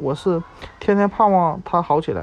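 ordinary delivery

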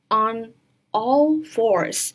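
very slow "on all fours" with all stressed. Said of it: "先看这个单词".

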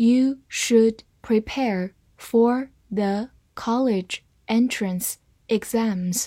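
slow, careful read-aloud, like dictation.

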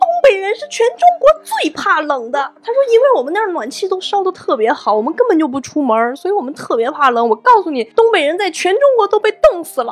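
very high, shrill, swooping, outraged indignant shout. Quoting a Northeastern friend answering a Hunan friend, retelling a loud indignant shout. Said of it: "他就大声的呼喊说".

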